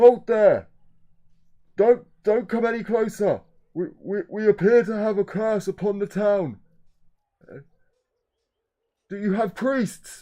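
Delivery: loud shout. Narrator voicing a town guard calling to an approaching boat: shouting a warning. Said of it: "And he shouts out to you".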